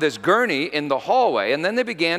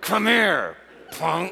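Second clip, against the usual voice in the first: words forced out through clenched, gritted teeth; 3 semitones higher than usual. Retelling what a woman in labor said to him, imitating speaking through clenched teeth. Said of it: "She clenched her teeth".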